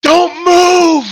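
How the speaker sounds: high, loud yell. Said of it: "I yell the dragon".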